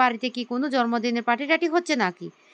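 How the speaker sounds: plain reading voice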